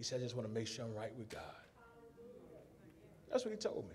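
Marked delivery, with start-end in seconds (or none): 0.2-1.4 soft, hoarse, rasping voice. Recounting what Brother Lewis said to him, imitating Brother Lewis's raspy voice. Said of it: "In his raspy voice".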